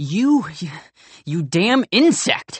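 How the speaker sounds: heated, excited outburst. Arguing with the other speaker, a character hurls an insult: excited, raised voice. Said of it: "I'm getting excited and raising my voice".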